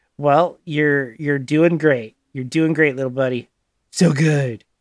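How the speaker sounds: patronizing, condescending tone. Playing Vaughn answering someone who never finished school: condescending. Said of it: "Vaughn's condescendingly".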